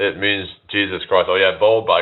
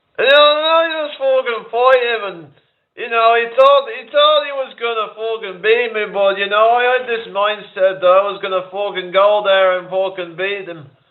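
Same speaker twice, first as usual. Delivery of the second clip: put-on Dublin accent, higher; 14 semitones higher than usual. Doing a mocking impression: Conor McGregor impression. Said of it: "Conor McGregor impression".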